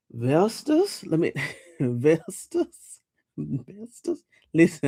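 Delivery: very slow, fighting off giggles, holding back laughter. Reacting to comments while reading a name, trying not to laugh. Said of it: "I'm trying not to laugh too hard".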